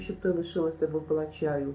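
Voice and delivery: plain reading voice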